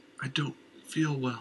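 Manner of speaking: gasping. A woman sliding to the floor in a man's arms, gasping. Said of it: "she gasped".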